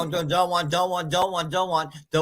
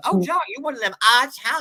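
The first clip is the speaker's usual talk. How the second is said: put-on very strong, high, sing-song country accent; 6 semitones higher than usual. Describing exactly how his mom talks, the speaker imitates her: his mom's country accent. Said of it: "That's exactly how she talks".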